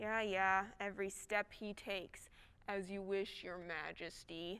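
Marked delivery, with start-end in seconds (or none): 2.7-4.6 low, quiet, mock-deferential sarcasm. Given an order to watch someone, replying to the one in charge: sarcastic. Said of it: "I know you're being sarcastic".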